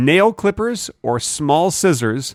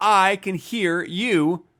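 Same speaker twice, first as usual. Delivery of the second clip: slow, drawn-out mocking delivery, every word dragged. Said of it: "You just said".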